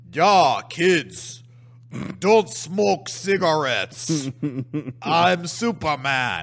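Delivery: put-on robotic German accent, very slow and drawn out. Describing a strange anti-smoking film, quoting Superman: robotic German Superman voice. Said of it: "talks like this robotic German guy".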